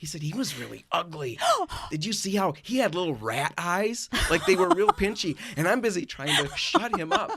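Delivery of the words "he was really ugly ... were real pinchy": blunt, frank, tactless, unfiltered tone. Father retells what his son Caleb said while mimicking him, retelling a loud remark. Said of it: "really loud".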